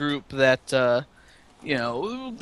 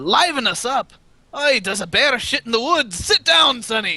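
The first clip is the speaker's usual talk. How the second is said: put-on pitched-up dwarf character voice; 8 semitones higher than usual. Voicing a dwarf at a rowdy table who answers a newcomer: voicing a dwarf. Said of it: "he looks at you and says in Dwarven".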